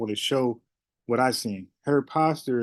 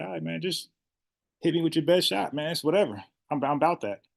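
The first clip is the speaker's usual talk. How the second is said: pitched-up, nonchalant, confident, unbothered cool; 5 semitones higher than usual. Commenting on her behavior and voicing her: imitating a cool, unfazed attitude. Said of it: "She's cool. She got a confident stance".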